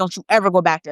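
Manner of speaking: put-on terrified, scared tone. Retelling parents forbidding a child to go back there: imitating terrified parents. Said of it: "they're terrified".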